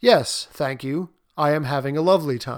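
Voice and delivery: dead flat, emotionless, dry ironic delivery with no cheer. Demonstrating sarcasm with a cheerful line in flat, emotionless sarcasm. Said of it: "by draining the emotion from it in my tone, I make it sarcastic".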